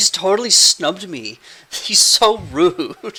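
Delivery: high, sulky, pouting whine.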